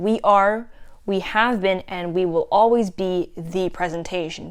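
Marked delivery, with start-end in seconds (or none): none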